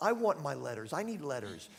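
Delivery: normal talking voice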